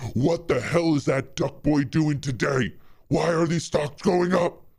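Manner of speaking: mock loud, shrill yell. Imagining a boss yelling at the intern: imitating Ken Griffin yelling. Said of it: "Ken Griffin is yelling at the intern".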